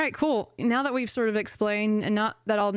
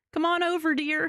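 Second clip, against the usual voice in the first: fond, motherly voice, pitched high; 8 semitones higher than usual. Retelling what Venusaur says in its flower home: Venusaur sounding like a mom. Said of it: "It's like your mom".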